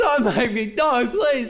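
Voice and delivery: put-on very high, sobbing, pleading voice. Retelling being made to fetch the belt, imitating yourself crying on the floor. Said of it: "I'd be like on the floor crying".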